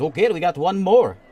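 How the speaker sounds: put-on thick Russian accent. Voicing the barkeep in a story, the speaker uses a thick Russian accent. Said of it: "in this thick Russian accent".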